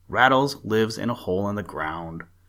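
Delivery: ordinary delivery, nothing marked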